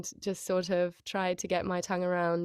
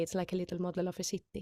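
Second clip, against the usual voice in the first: put-on Icelandic accent, quieter; 5 dB quieter than usual. A voice actor recalls the warm-up phrase used to voice Toka, in Toka's Icelandic accent. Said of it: "to get into the accent".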